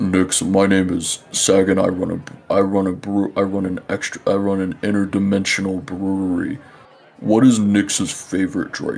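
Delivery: fiery, deep rumbling voice with a crackle. Storyteller voices a character the listener hears, a deep rumbling, fire-crackling voice. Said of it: "a deep rumbling voice that sounds like it has like fire crackling".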